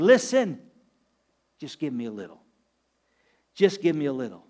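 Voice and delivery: gentle, low, tender-hearted voice. Speaker voices God speaking to her, imitating a tender voice. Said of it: "You can hear the tenderness in his voice".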